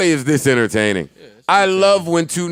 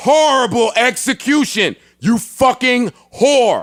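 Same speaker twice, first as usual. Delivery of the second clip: high, acted-out screaming in all caps; 9 semitones higher than usual. Reading aloud a post typed in capital letters: screaming a post typed in caps. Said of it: "That's why I'm screaming".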